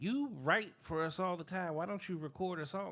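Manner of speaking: ordinary delivery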